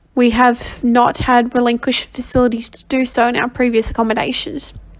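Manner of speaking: ordinary delivery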